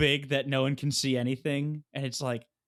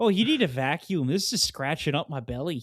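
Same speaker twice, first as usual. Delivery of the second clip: put-on Midwestern accent. Voicing a big snake coming through the window, talking like a Midwesterner. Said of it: "Maybe it was like a Midwesterner".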